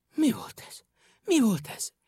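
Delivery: scared, startled, frightened and high-pitched. Narrator reading a story, a character asks after something rushes past, frightened. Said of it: "Kérdezte Picúr rémülten".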